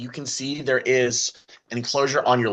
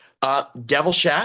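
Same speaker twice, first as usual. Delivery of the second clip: ordinary talk, nothing marked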